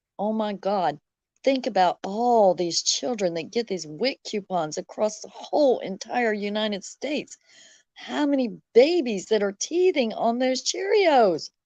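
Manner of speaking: normal talking voice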